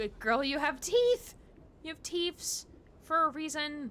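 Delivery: mock scolding in high, loud pet-talk voice.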